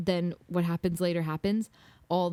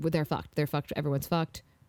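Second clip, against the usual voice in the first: frightened, scared, instant gut reaction; 3 semitones lower than usual. Retelling a reaction to the scariest moment of the week: retelling own scared reaction. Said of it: "I was scared".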